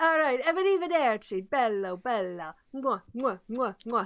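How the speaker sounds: put-on Italian accent. A character says his goodbyes before leaving, italian accent. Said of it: "He's going from Italian to Irish".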